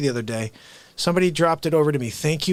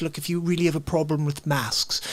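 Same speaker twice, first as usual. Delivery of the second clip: put-on posh, polished, very proper English accent; 3 dB quieter than usual. Retelling what a documentary presenter said: imitating a very proper English accent. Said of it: "very proper English accent. And he was doing it like this".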